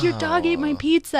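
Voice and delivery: yelling, pitched way up, very high. Retelling how the brother found his pizza by the dog: imitating someone yelling. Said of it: "he starts yelling at the dog".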